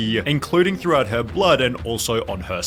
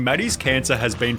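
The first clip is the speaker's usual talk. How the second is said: usual speaking voice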